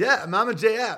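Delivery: smug, smarmy, arrogant whining sneer. Mimicking a guy you want to see jailed, imitating a smarmy, arrogant, whiny accent. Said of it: "whiny accent and speech of his".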